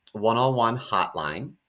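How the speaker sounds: ordinary delivery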